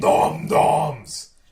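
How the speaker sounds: very loud, booming giant voice calling out. The narrator voices a giant hand reaching in to grab a gnome: loud booming voice. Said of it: "a loud, booming voice go".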